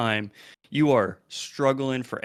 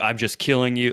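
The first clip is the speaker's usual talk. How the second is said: put-on flat deadpan voice. Retelling a scene where Joel speaks to everyone: deadpan Joel impression. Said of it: "he's just deadpan".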